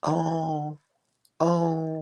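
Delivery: put-on high, soft, swooning sigh in an older voice.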